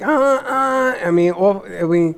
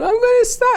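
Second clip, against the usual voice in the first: very high screaming cry. Retelling how the sister screamed on the phone in highway traffic: imitating someone screaming. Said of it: "she's screaming at me on the phone".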